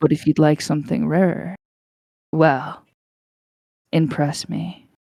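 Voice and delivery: creepy put-on character voice. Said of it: "that's creepy".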